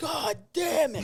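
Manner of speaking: acted-out scream. Retelling spitting out a chunk of meat at a meal: retelling a scream. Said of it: "and I screamed".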